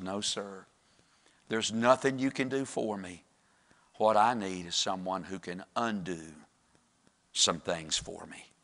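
acted-out weak, somber, soft and feeble voice. Telling a story, acting out the young man's answer in a weak, somber voice. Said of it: "in a very weak and somber voice".

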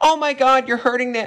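put-on concerned tone. Mocking how vegan teacher talks about animals: mocking vegan teacher's fake concern. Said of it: "the way you're saying".

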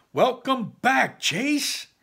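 loud, shrill, very high-pitched exclamation. Narrator voicing a doctor who bursts into a patient's room: exclaiming. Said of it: "he exclaims".

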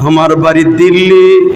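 tearful, weeping voice.

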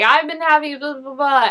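put-on stutter.

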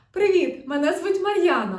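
very loud, resonant, bright ringing amazed tone. Voice exercise introducing herself, ringing voice with surprise. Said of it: "залишаємо таке ж здивування та проговорюємо".

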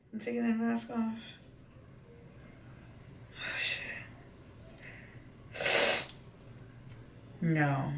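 whispered, breathy, tearful crying through pain. Taking a face mask off on camera, crying from pain. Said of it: "Literally crying right now".

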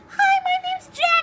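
very high-pitched fake put-on voice. Introducing yourself as Jack during a cinnamon challenge, talking high pitch. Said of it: "I'm talking high pitch".

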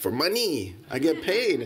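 put-on Mexican accent, swooping. Retelling how a man answered why he jumped, affected Mexican accent. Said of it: "and I think with an affected Mexican accent".

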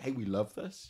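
ordinary delivery

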